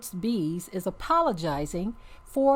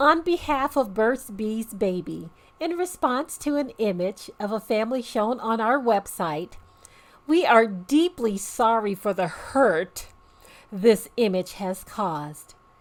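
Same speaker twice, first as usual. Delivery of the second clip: somewhat sarcastic, formal corporate-style reading; 3 semitones higher than usual. Reading a company's apology aloud: reading sarcastically, put on. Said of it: "I'm gonna read it kinda sarcastically".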